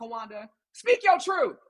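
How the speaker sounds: ordinary delivery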